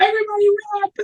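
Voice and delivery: high, panicked screaming and hollering. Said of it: "all you hear is just fucking screaming and hollering".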